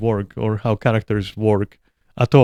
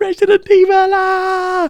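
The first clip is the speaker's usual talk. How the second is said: very high, drawn-out, excited squeal; 4 dB louder than usual. Describing how gamers react when a new game comes out: mimicking fans losing it. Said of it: "losing their shit".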